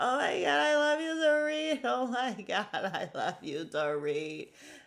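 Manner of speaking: mock, loud, high blubbering boo-hoo sobbing. Recapping a flashback of a brother, imitating someone crying. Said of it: "crying, like, boo-hooing".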